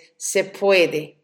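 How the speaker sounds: normal talking voice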